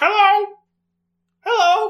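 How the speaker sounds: put-on voice, very shrill, very high, very loud. In a tabletop game, a player voices a character mimicking her voice. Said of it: "She mimics her voice and he's like".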